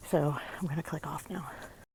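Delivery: huffing and puffing, out of breath, soft. Climbing a hill while signing off, out of breath. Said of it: "I'm kind of huffing and puffing up this hill".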